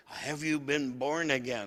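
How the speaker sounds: ordinary talk, nothing marked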